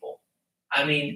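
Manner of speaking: ordinary delivery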